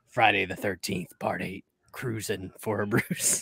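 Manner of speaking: very low, deep, soft, dramatic movie-trailer announcer. Recalling a late-1980s movie trailer in a theater, in a deep movie trailer voice. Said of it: "you hear that deep voice go".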